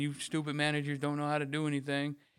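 playful mock teasing, jokingly insulting tone. Retelling what he jokingly said to someone during a dispute, in a joking tone. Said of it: "when I was joking with you going".

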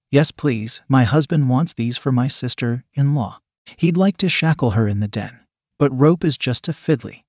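ordinary delivery

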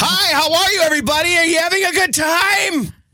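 booming, blaring, very high-pitched loud-talker voice. Listing annoying party guests, acting out the loud talker: imitating a loud talker. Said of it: "Number three is the loud talker".

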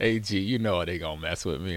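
ordinary talk

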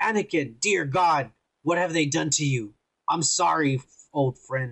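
put-on British accent. Imagining what a character will say on seeing a face: imitating Obi-Wan in a British voice. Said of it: "in a British voice".

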